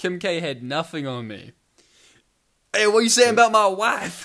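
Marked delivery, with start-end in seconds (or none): 2.7-4.3 riled-up, upset, loud, raised and high. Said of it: "I was doing a [name] impression".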